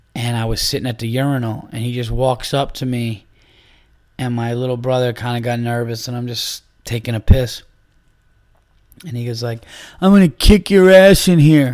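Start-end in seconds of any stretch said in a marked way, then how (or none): 10.0-11.8 mock, raised, in-your-face, menacing, aggressive voice. Retelling a threat from a stranger in a restroom: imitating an aggressive threat. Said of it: "the dude was getting aggressive in my face".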